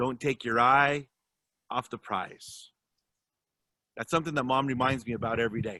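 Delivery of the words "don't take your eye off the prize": very deep, grave voice from low down. Quoting a late colleague's voicemail sign-off: John Lewis deep voice. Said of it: "he would tell you in that very deep voice".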